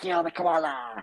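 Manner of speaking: crazed, deranged, demented, unhinged delivery. Retelling a childhood chase game: imitating a demented voice. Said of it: "in this demented voice".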